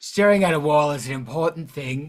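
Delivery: patronizing, smug, soothing calm voice.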